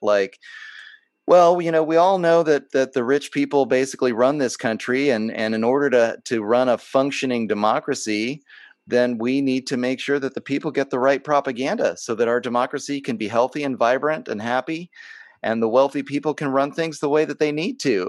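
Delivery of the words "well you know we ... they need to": normal talking voice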